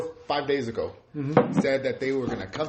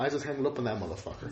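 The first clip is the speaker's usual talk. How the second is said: ordinary delivery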